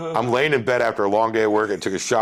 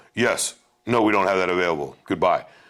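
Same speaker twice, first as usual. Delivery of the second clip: put-on curt, terse tone; 3 semitones lower than usual. Complaining about bad customer service, the speaker mimics staff giving a curt reply. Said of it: "they give me one-word answers and then hang up".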